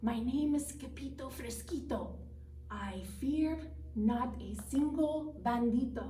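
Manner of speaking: hushed, very very soft, quiet delivery. Narrator reads a shaking character introducing himself: very soft voice. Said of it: "in a muy, muy soft voice".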